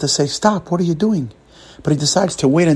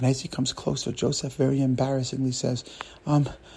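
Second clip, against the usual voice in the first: ordinary delivery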